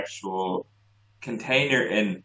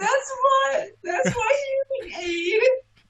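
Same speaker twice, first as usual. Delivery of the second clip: very high cartoon character voice. Retelling what a man said who sounded like a cartoon, cartoony voice imitation. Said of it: "it just sounded exactly like that".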